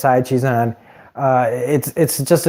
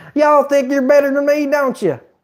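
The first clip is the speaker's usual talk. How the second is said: put-on hillbilly voice, very high pitched; 13 semitones higher than usual. Talking about a TV show, the speaker tries out the hillbilly voice. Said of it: "the hillbilly voice?".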